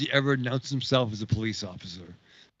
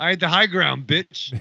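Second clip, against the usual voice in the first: surly, loud voice pitched higher; 5 semitones higher, 5 dB louder than usual. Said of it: "surly Kenobi in the back".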